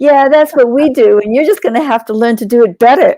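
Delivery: smug, sneering, snotty, obnoxious know-it-all tone. Speaker retells what the herd said to them, mock snotty, obnoxious voice. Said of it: "in a really sort of snotty, kind of obnoxious voice".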